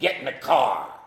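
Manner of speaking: put-on rough, old, raspy, whiskey-worn voice. Retelling a tattooed firefighter ordering the speaker to get in the car: old whiskey raspy voice. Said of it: "He had this old whiskey, raspy voice".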